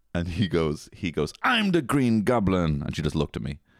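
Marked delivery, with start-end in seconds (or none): 1.4-2.8 put-on slow, drawn-out, silly little kid voice. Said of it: "Do it with a little silly Billy voice".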